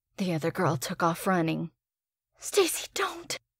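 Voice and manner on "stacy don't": loud whisper at a very high pitch. As the other girl runs off, she calls after stacy: loud whisper. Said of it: "She whispered loudly".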